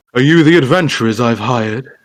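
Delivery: sudden, blurted out in a wizard voice. A narrator voices a wizard asking if these are the adventurers he hired, deep baritone. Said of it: "The deep baritone voice of the wizard blurts out".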